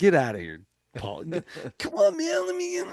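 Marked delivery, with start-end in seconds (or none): 1.2-2.9 very high, pleading, whining put-on voice. Retelling how he begged to be let in, do the Pauly Shore voice. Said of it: "he was doing his Pauly Shore voice".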